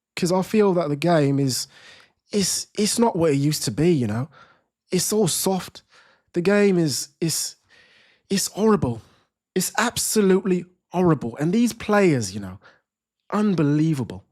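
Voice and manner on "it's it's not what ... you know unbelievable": British accent, put on for show. Host on a live channel, conjuring up a put-on British accent. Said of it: "I'll have to conjure up my British accent".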